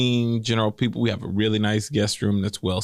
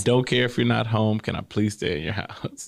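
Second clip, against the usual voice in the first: put-on crying, tearful voice. Retelling a guest's phone call begging to stay: imitating someone crying. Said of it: "she called Aisha crying".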